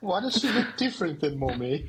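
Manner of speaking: mock upper-class accent. Voicing a pet who asks about its father: posh accent. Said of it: "Now she's got a posh accent".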